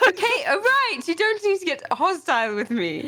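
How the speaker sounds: high-pitched, drawn-out, protesting yell. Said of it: "Now you're yelling".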